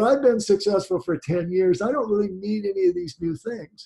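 ordinary delivery

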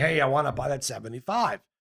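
put-on speaks with New York accent. Retelling a stranger's phone call to him, in a New York accent. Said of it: "I hear a New York accent call me up and say".

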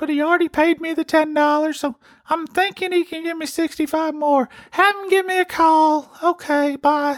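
very high, squeaky put-on man's voice. Imitating how a man sounds, in a very high-pitched put-on voice. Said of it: "That's what he sounds like. I didn't know if I could hit that octave or not".

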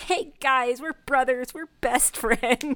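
put-on overly chummy, super jovial, slow delivery. Retelling a scene where a character greets his friends: imitating a super jovial greeting. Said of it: "super jovial".

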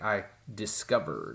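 odd, acted, snake-oil-salesman-like delivery and pitch. Retelling an actor's line from a speech scene: imitating a weird line delivery. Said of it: "he says it in this weird thing".

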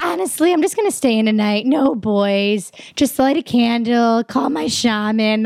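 put-on slow lingering drawl, "boys" stretched out. Imitating a friend's typical talk about staying in: imitating Tracy's voice. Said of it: "one of my favorite per-, people to impersonate".

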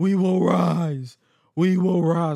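put-on wrestler shouting. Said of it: "while [name] shouted".

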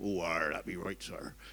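put-on low southern New Zealand accent, freely rolled r's. Describing how their 92-year-old mother talks: imitating mother's rolled-R southern accent. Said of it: "but with a southern accent, she rolls her R's".

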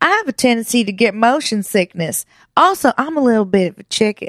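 fake, put-on Southern country accent. Quoting a woman scared of amusement park rides, in put-on Southern country accent. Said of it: "it's country and southern".

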